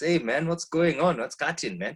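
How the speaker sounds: high Zambian-influenced speech. Showing how they talk with Zambian people: Zambian-influenced accent. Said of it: "start hearing me talking like this".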